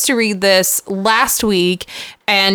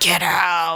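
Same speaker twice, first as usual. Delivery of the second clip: put-on demon voice, lower and quieter; 3 semitones lower, 5 dB quieter than usual. Describing the kind of ghost story that never happened, in a demon voice. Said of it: "demon voice going".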